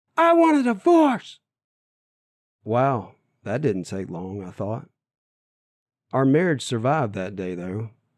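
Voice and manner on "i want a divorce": high, loud scream through tears. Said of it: "she screams at the top of her lungs".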